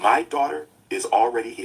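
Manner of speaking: dead level, flat, drained of all feeling. Quoting her reply on the phone, retelling a flat, emotionless reply. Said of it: "with no emotion at all".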